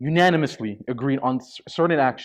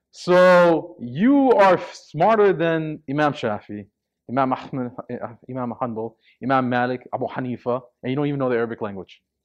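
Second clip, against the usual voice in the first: put-on ironic, sarcastic, cutting tone. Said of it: "I said this sarcastically".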